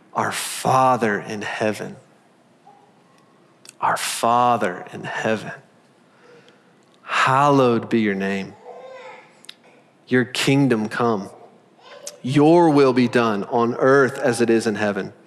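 slow, deliberate, unhurried reading aloud. Reading a prayer aloud to listeners, reading slowly. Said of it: "I'm going to read it slowly".

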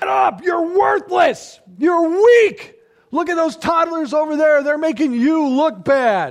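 very high, very loud, shrill screaming. Imagining parents screaming at a kid who fell: mock screaming like CrossFit coaches. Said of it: "start screaming at him like, you know, two CrossFit coaches".

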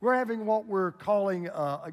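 ordinary delivery

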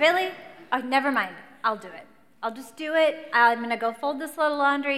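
acted, very loud, irritated tone. Retelling being triggered in an argument: imitating her own annoyed reply. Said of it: "that was the trigger for me".

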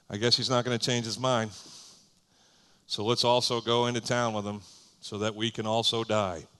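gloomy, mopey, resigned voice. Picturing how he would have said it, voicing him like Eeyore. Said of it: "I picture him saying it this way. ... He gets all Eeyore on the situation".

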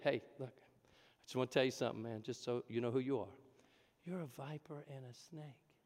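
kind, gentle, friendly tone, very soft. Asking how to say that nicely, then saying it nicely. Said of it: "How do you say that nicely?".

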